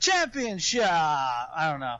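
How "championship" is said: ring announcer voice, very high "championship", "p" dropped. Imitating the WWE lady announcer saying the word: imitating WWE lady announcer, no P. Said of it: "the lady announcer ... when she says championship".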